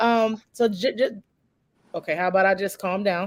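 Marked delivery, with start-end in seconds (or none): 0.5-2.1 stumbling, stammered, stuttering restart. Starting a show with a guest, stuttering. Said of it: "I'm stuttering again".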